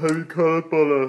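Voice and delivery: words stretched through a yawn. Asking the other speaker about a TV show, talking while yawning. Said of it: "sorry, I'm yawning".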